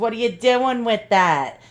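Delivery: put-on New York accent, busybody manner. Asking viewers to be kind, imitating commenting busybodies in a New York accent. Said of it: "my New York accent is really irritating".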